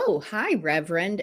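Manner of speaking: mocking, insincere, sarcastic tone. Retelling how people greeted the speaker after getting titles: imitating a sarcastic greeting. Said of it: "and very sarcastically".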